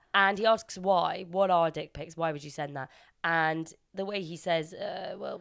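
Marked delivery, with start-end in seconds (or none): none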